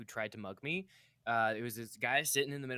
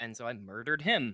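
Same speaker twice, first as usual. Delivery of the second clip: ordinary delivery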